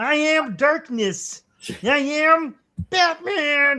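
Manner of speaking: very high, loud, slow squeaky puppet voice. Joking about casting for Batman, doing Kermit the Frog as Batman. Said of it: "And Kermit the Frog as Batman".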